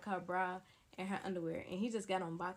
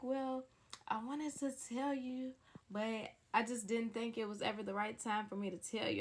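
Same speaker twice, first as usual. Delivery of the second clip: play-acted weepy, tearful speech through crying; 2 semitones higher than usual. Retelling what a crying friend said about the right time: imitating someone crying. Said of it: "she's just sitting here and she's crying".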